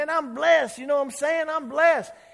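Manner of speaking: loud, high voice for all. Retelling a man's words in a chicken restaurant: imitating a man raising his voice. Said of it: "he's raising his voice. He goes".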